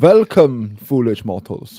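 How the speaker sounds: very loud, booming put-on German accent. Greeting the others as they join: Haunted Mansion ghost host, German accent. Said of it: "Why are you being the Haunted Mansion ghost host, but German?".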